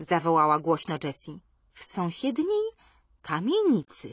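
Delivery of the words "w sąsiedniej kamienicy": slow, drawn-out reply. Narrator reads a girl answering the other girls' question, answering slowly. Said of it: "odparła Ermengarda równie powoli".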